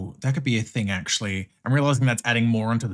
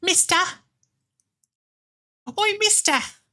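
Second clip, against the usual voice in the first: very high, put-on Cockney chimney-sweep call. Reacting to how something was said, in a Cockney chimney-sweep voice. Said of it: "like Cockney type voice".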